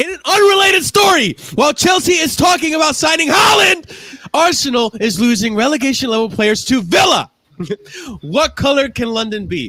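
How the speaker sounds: angry read-aloud delivery. Reading text aloud at another speaker's request, in an angry voice. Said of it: "in your angry voice".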